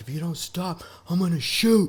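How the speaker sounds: mock, shrill, very high, shouted cop voice. Retelling how a cop yelled a warning during a chase: imitating a cop yelling. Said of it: "he just yells".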